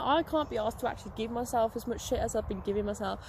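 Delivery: ordinary talk, nothing marked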